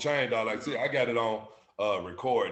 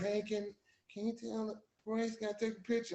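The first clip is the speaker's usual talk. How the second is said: put-on whisper, higher and quieter; 12 semitones higher, 10 dB quieter than usual. Retelling friends from high school asking for a picture: imitating a whisper. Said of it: "They whispering".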